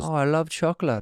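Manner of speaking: fake German accent in a put-on dog voice. Voicing a dog who sees a chocolate bar: put-on German accent. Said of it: "I will do it for you".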